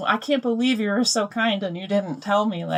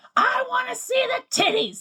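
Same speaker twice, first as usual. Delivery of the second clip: mock toddler scream, higher. Retelling how a toddler in a lobby yelled: imitating a toddler screaming. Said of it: "he starts screaming at the top of his lungs".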